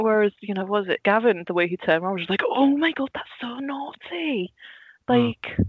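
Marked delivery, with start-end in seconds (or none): 2.5-5.4 slow, high-pitched, badly done Welsh accent. Recalling how Gavin reacted, quoting him in a really bad Welsh accent. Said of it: "did i just attempt a really bad welsh accent".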